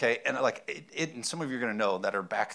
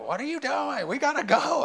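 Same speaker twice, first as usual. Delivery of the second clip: mock yelled, shrill, loud yell. Retelling the speaker's wife calling from the other room, imitating her yelling. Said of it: "she's yelling at me from the other room".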